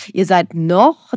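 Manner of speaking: noch stressed hard, drawn out slow, wide pitch.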